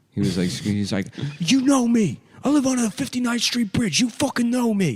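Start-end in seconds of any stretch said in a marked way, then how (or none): 1.4-5.0 put-on furious, aggressive scream, pitched very high. Retelling a man being arrested at the door: imitating someone screaming aggressively. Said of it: "getting arrested and screaming at the cops".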